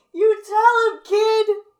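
mock very high, shrill, drawn-out belligerent drunk cheer. Acting out a drunk background character during Melora's accusation of Taminella, imitating a belligerent drunk. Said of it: "he gets a little belligerent".

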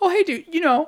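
very high, squeaky, high-pitched put-on voice. Quoting what Gabe said, in a high-pitched Gabe voice. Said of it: "I love how Gabe is a high-pitched voice in this context".

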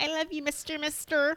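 put-on odd high baby voice. Imitating how Brie talks to her partner, weird baby voice. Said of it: "does this weird baby voice".

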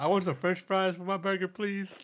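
put-on imperfect American accent. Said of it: "she followed up and she says".

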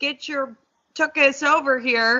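firm, serious, genuinely stern tone. Showing what a dog owner will say to the dog: imitating Dad, real stern. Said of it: "and be real stern".

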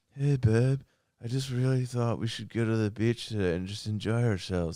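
hunky heartthrob way of talking. On a podcast, speaker describes how a 35-year-old guy talks, imitating how a guy talks. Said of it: "and he talks like this".

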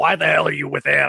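put-on rough, rasping smoker's voice. Retelling what a school principal said to his mother, in a put-on smoker's voice. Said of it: "this is my smoker's voice".

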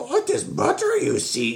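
high, swooping, swinging alien sage voice. Retelling a man's scam at the grocery store butter, doing a Yoda voice. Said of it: "He did a Yoda sound".

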